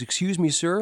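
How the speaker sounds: timid, as meek as can be, high little voice. Retelling how a skinny kid walked up to him: meek imitation of John. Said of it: "meek as can possibly be".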